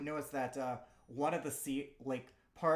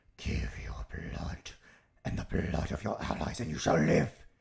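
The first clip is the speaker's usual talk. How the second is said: loud, rasping, creaky, rough demon voice; 8 semitones lower, 5 dB louder than usual. Describing a game scene to a player, voicing the demonic voice. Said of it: "You hear this demonic sounding voice".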